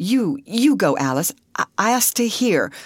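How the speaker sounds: hesitant, faltering. Ruth urges Alice to go while she stays behind, faltering. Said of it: "Faltered Ruth".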